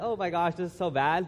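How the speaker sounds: ordinary talk, nothing marked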